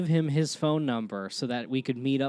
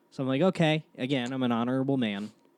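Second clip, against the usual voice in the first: normal talking voice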